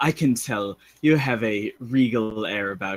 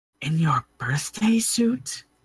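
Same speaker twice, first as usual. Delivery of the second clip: sly, secretive, pitched-up stage whisper; 7 semitones higher than usual. Voicing a character who looks around before asking: whispering in character. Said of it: "she looks around and then whispers".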